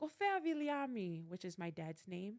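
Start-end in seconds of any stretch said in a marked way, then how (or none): 0.0-1.3 high, shouted, yelling voice. Retelling a phone call, the speaker acts out a voice calling back: retelling a yell. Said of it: "the voice yells back and says".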